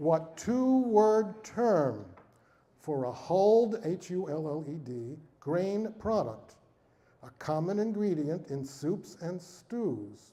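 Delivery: very slow, deliberate reading at a crawl. Host reads a quiz question aloud to the audience, reading very slowly. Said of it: "I will read it very slowly".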